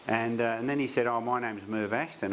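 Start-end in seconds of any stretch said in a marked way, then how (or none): none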